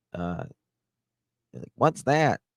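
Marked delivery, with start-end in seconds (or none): 1.7-2.3 Appalachian accent, higher pitch. Showing how own voice sounds through the phone: appalachian voice.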